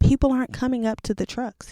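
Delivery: furious outburst. Retelling what a livid colonel said to the National Guard: imitating a livid colonel. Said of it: "He was livid".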